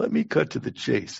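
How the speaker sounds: rough, put-on New Jersey mobster voice, laid on thick. Pitching for a car salesman job in Hoboken, Tony Soprano voice. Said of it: "My prompt was voice of Tony Soprano. ... I have to do this voice".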